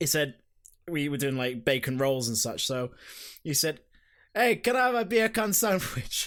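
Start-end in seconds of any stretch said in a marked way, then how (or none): 4.3-6.3 casual, pitched-up, put-on Jamaican accent. Retelling what a man at the workplace asked for: imitating a Jamaican accent. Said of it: "because of his Jamaican accent".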